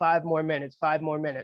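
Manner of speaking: normal talking voice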